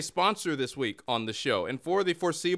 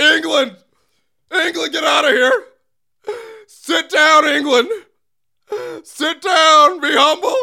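very high, very loud, shrill, triumphant gloating shout; 11 semitones higher, 14 dB louder than usual. Host gloats at england after a win, in a too-loud gloating shout. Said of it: "That was too loud".

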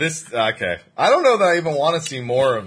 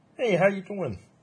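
put-on puppet frog voice; 8 semitones higher, 5 dB quieter than usual. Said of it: "I could imagine Valen sounding like Kermit".

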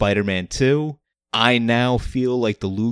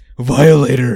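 bad put-on devil voice, louder; 3 semitones higher, 9 dB louder than usual. Retelling a movie scene where the devil yells: bad devil voice. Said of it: "I can't do good voices".

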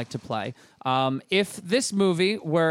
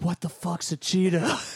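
whispered delivery. Acting out an imagined scene, a character whispering to Jacko: whispered line. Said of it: "whisper something to Jacko".

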